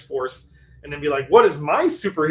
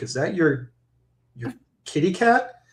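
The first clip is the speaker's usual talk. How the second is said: imitated whisper; 3 semitones higher than usual. Retelling what a date said at a restaurant: imitating a whisper. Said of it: "whispered to me".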